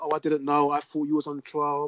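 ordinary talk

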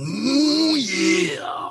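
"ooh" drawn out at very high pitch. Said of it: "not to do that while saying".

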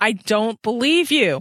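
high, sharp, panicked voice sharpening every word. A character searching a grand salon for someone missing, high, sharp, panicked voice. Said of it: "Diana's voice was high and sharp with panic".

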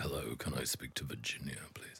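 sweet, soft honeyed tone. Retelling a phone call from Tim Bell: imitating Tim Bell's honeyed voice. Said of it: "this honeyed sort of, you know, mature voice".

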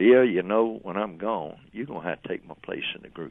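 usual speaking voice

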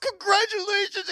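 very high, sobbing, tearful bawling wail. Retelling a guy's reaction to news meant to be kept quiet, imitating him bawling. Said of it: "he starts bawling".

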